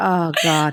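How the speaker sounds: quiet, deflated voice. Retelling own reaction to a child's blow-up: imitating going quiet and deflated. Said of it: "I just go really quiet".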